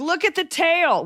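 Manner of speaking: high, slow mock yelling.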